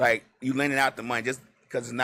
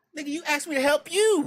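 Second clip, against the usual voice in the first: acted-out snapped retort, voice way up; 4 dB louder than usual. Acting out a reply to someone who asked for help: imitating snapping back. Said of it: "Do you snap back and say".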